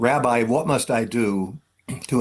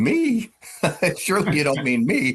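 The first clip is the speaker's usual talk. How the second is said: voice shooting octaves higher, swooping, way up high; 5 semitones higher than usual. Retelling answering a recruiter who asked about candidacy, voice jumping much higher. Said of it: "my voice went up about three octaves".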